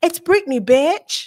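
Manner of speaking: put-on American accent. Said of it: "I'm trying to do my American accent".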